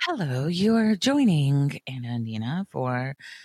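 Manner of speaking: slow, deliberate on-air radio announcer voice. Imitating the co-host's greeting: imitating Nina's radio voice. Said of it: "like your radio voice".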